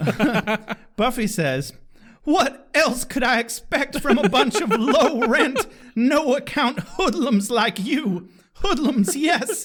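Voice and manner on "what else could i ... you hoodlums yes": high, laughing, dramatic reading. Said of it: "the dramatic reading Buffy voice".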